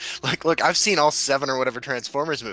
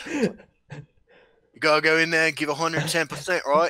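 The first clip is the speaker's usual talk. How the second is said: put-on Australian accent; 3 semitones higher than usual. Trying the co-host's rural Michigan accent while joking about accents, co-host's accent, but Australian. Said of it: "You just did my accent, but Australian".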